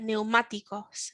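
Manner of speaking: middle syllable má leaned on in neumáticos. Pronunciation lesson on where a word's strength falls: stress on the syllable má. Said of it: "you can hear the A in the middle is the stronger part there".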